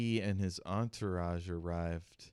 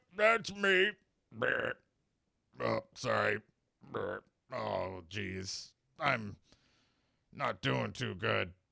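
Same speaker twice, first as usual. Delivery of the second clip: put-on drunk-sounding character voice; 3 semitones higher than usual. Voicing the customs official answering the professor's question, drunk Tobin voice. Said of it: "who is sloshed".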